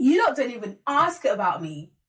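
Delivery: fed-up venting boiling over into sudden angry outburst. Retelling how a character finally snapped at everyone: imitating an angry outburst. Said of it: "an outburst".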